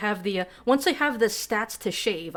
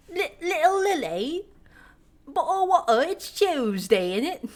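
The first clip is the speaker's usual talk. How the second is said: silly put-on British accent, high and slow; 7 semitones higher, 4 dB louder than usual. Asked if they do a British accent, speaker shows their stupid British accent. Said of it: "the fucking stupid British one that I just did".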